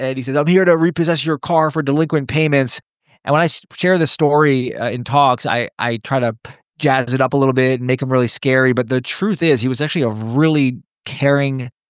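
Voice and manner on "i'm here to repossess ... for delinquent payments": put-on Long Island accent. Retell what the man repossessing your car said to you, in a thick Long Island accent. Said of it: "he looks at me with a thick Long Island accent".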